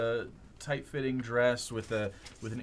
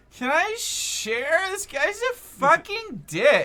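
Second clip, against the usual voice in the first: put-on very high, shrill, loud drunk woman's voice; 7 dB louder than usual. A woman in a shared cab speaking up, drunk woman voice. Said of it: "she's drunk".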